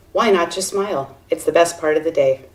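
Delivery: ordinary talk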